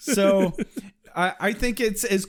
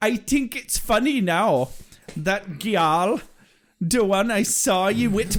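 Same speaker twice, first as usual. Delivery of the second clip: imitated Jamaican accent. Imitating a witch character locking someone in a cage: imitating a jamaican accent. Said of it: "Definitely a Jamaican accent".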